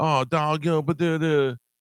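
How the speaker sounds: put-on very high, slow twelve-year-old gangster voice. Mocking the caller's speech: imitating a twelve-year-old gangster. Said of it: "you sound like a, like a twelve-year-old".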